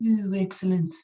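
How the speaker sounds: cartoon rich-boss character voice. Showing the line the other speaker should have done: Mister Burns voice. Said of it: "waiting for you to go".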